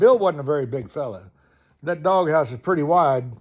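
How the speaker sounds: normal talking voice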